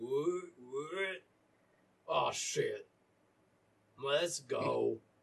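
drowsy, groggy, sleepy just-woken voice. Narrating a game scene, a voice answers Captain Bailey's shout, in a sleepy voice. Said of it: "you hear kind of a sleepy voice go".

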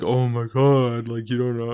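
dripping, sarcastic scoff. Describing how a seller talks down to a would-be buyer, retelling a sarcastic remark. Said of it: "a sarcastic".

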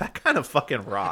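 ordinary talk, nothing marked

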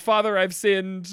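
normal talking voice

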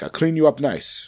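bad, failed put-on Finnish accent. Retelling what the man who gave free Christmas haircuts said, failed Finnish accent. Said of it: "That's not a Finnish accent".

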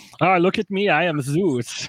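imitated Austrian accent. Mocking the film's jacked Zeus, doing Zeus with an Austrian accent. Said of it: "He has like an Austrian accent".

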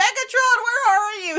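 very high, loud, shrill yell, drawn out. Retelling a scene where a character yells into a storm: imitating Starscream yelling. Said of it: "He's yelling into this blitz of a cyclone".

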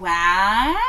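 drawn-out, stretched cartoon-style "wow". Doing a cartoon voice on the word wow: SpongeBob wow. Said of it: "That's my SpongeBob wow".

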